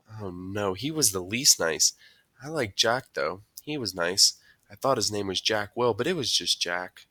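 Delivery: ordinary delivery, nothing marked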